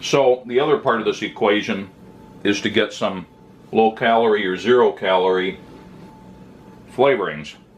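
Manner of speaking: talking while munching, mouth full. Explaining a low-calorie food while eating it, talking while munching. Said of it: "pardon me while I'm munching here".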